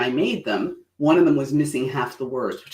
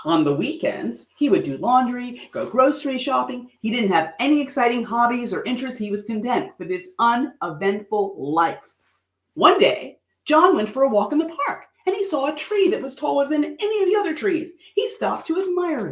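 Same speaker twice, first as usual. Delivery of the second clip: expressive storytelling delivery, pitched up; 9 semitones higher than usual. Reading a short story aloud again for listeners following along, read with feeling. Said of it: "do it once more with feeling".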